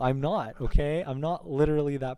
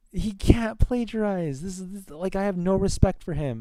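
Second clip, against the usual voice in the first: high, heated, mad, worked-up rant; 6 semitones higher than usual. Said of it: "why are you so mad?".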